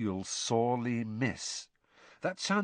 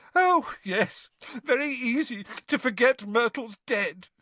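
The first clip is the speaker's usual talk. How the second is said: very high, slow, gulping through each word; 12 semitones higher, 7 dB louder than usual. Reading fiction, Myrtle replies to Harry's apology, gulping.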